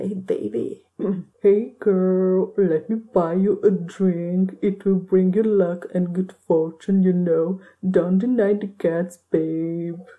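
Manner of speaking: over-the-top, ridiculous straight-guy bro voice. Acting out a straight guy hitting on a girl in a bar, ridiculous straight guy voice. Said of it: "I have a ridiculous straight guy voice".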